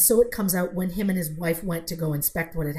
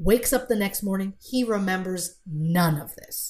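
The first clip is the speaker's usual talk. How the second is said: ordinary talk, nothing marked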